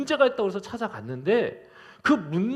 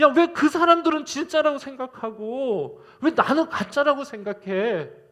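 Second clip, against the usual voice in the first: mock aggrieved, wounded, high, resentful complaining tone; 5 semitones higher, 4 dB louder than usual. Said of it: "너무 야속한 거야".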